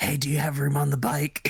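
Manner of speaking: in a whisper. Playing a character asking another if there's room on the bike: whispering. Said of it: "Theo whispers to Reese".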